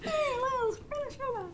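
high soft puppet-like voice.

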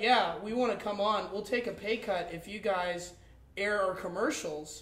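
plain

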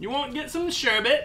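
terrible put-on British accent. Acting out a uk local asking his mate to the pub, in a terrible british accent. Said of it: "Our British accent's terrible".

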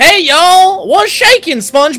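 put-on Texan accent. A character greeting another, texan accent. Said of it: "she sounds like a Texan".

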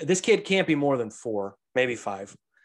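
ordinary delivery

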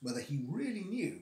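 ordinary delivery, nothing marked

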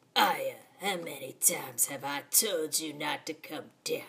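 low, hushed, shady, creepy-sounding man's voice. Voicing the father character speaking to Aya, in a sketchy voice. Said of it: "I'm gonna give him a sketchy voice".

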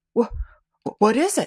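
anxious, nervous, uneasy. Told to wait in the child's room for a startling sight, Hoyne asks nervously. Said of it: "Asked Hoyne nervously".

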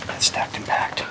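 soft, unvoiced whisper.

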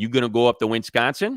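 loud Chicago accent with an added n sound. Showing how people in Chicago say things, Chicago accent with extra n. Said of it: "So with the Chicago accent, they say".

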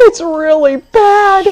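shrill, high, loud panicked cry, stretched out. A narrator reads an orangutan crying out above two sun bears: panicked cry. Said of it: "a panicked voice cried out".

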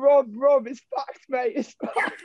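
very high, tearful, almost-crying, drawn-out shout. Retelling a teammate lying hurt at training: imitating someone shouting near tears. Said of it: "he's almost crying on the floor, shouting".

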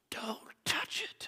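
barely voiced, whispered mutter under the breath. Retelling a moment with a cup, the speaker quotes a man, retelling a mutter under breath. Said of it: "under his breath he goes".

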